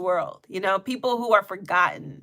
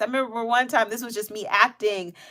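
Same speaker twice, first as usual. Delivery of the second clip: normal talking voice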